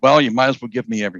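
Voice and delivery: ordinary talk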